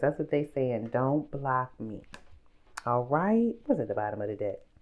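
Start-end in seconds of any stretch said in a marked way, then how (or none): 0.9-2.0 put-on baby voice, slower. Mimicking what others keep saying to the speaker, in a little baby voice. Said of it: "like a little baby, you know, don't block me in that type of voice".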